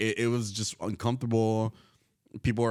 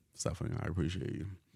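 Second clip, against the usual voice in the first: low-pitched voice, lower and quieter; 4 semitones lower, 8 dB quieter than usual. Thanking another speaker for help, voice dropping low. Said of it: "your voice got really low there".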